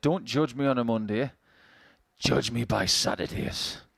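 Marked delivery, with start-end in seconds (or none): 2.2-3.8 menacing, low, sinister villain voice. Suggesting a t-shirt slogan for him, the speaker reads it in a sinister voice. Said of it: "I don't know why I did that in a sinister voice".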